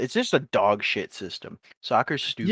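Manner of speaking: plain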